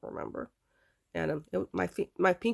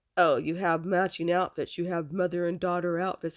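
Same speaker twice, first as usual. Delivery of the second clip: mock, put-on sarcastic tone. Retelling what Nana said about the matching outfits: imitating a sarcastic remark. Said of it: "she was very sarcastic about it".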